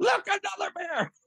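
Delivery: very high, shrill, loud yell. Retelling how the son yelled again at the cubs: imitating a child yelling really loud. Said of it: "he yells really loud".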